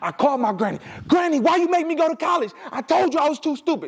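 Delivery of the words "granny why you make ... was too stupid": mock, all-out, high-pitched yelling. Retelling his phone call to his grandmother: imitating himself yelling. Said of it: "if I'm yelling or if I'm screaming".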